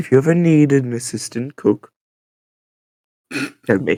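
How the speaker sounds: whispered aside in a character voice. Playing a character who quietly offers Vi help in the kitchen: whispering in character. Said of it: "I'm gonna whisper to Vi".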